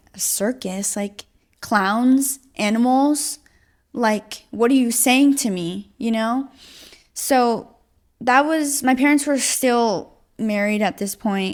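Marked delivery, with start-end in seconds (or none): none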